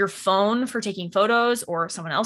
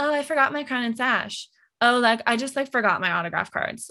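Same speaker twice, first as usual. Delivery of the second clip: put-on dumb-sounding, ditzy valley-girl voice. Mocking someone booked for an appearance who forgot crown and sash, in stupid valley voice. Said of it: "I'm using my stupid valley voice".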